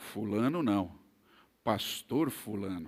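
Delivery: deep, soft, grave, solemn, weighty put-on voice. Speaker retells a man correcting the school secretary: retelling in a deep voice. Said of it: "com voz grave disse".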